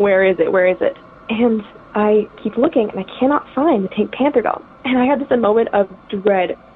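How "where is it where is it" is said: ordinary talk, nothing marked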